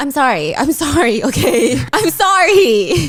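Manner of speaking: laughing throughout, words drawn out. Recapping a fan incident and apologizing for laughing, laughing while talking. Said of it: "I'm laughing".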